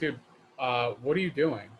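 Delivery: feigned ignorant tone, playing dumb. Acting out a planned confrontation with a neighbour revving his bike: playing dumb. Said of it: "I'm gonna go over and just play stupid".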